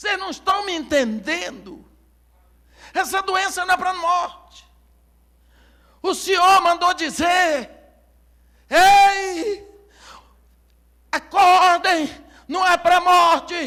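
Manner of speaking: play-acted high, loud shout, ei stretched long. The speaker acts out a young man who began shouting: imitating a young man shouting. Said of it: "Esse rapaz começou a gritar".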